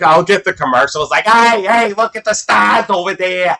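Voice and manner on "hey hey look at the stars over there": exaggerated, thick Boston accent, pitched up. Mocking how commercials do the boston accent; exaggerated boston accent. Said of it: "people do like the Boston accent".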